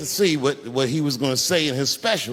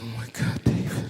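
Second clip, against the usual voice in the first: mock crying, lower and quieter; 4 semitones lower, 5 dB quieter than usual. Retelling what a crying partner said to him: imitating someone crying. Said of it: "And she's crying".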